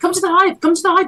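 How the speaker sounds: squeaky, very high, tiny bee character voice. In a game scene with bees, doing a bee impression. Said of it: "I've got to do my best bee impression now".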